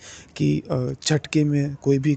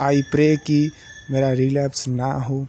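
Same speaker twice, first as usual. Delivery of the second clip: deliberately slow, calm, measured speech. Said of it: "मैं अभी इसीलिए इतना धीरे-धीरे बोल रहा हूँ".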